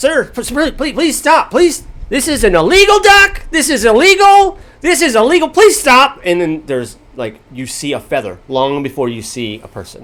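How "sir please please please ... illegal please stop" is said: very high, squeaky, shrill little voice. Recounting a scene with a partying crowd, voicing the tiny voice. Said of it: "There's a tiny voice".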